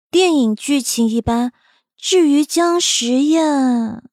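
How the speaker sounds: ordinary delivery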